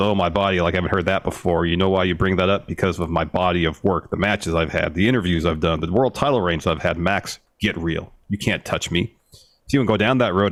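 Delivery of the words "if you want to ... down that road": ordinary talk, nothing marked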